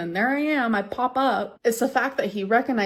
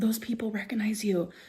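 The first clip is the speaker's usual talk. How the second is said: hushed, quiet whisper; 5 dB quieter than usual. Retelling what mom said at the piercing shop: imitating mom whispering. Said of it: "my mom was whispering to me".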